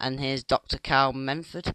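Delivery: ordinary delivery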